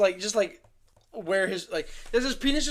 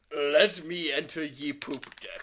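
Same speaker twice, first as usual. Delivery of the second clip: hammy, low, put-on pirate accent; 6 semitones lower, 4 dB quieter than usual. Working out a joke line with a partner, say it in a pirate accent. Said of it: "that is our pirate accent".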